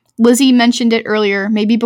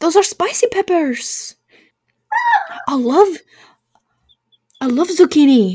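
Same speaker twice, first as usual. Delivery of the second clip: bad French accent, high, swooping; 6 semitones higher than usual. Quoting a french kid from a show: bad french accent. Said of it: "I can't do a French accent".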